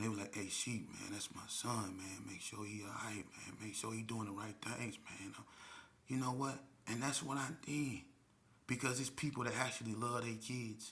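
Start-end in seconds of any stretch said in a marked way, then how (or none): 0.3-5.3 mock earnest, worried, soft, concerned older men's voice. Retelling phone calls from older men about their sons, imitating their concerned voices. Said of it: "in their voice, I can hear the concern".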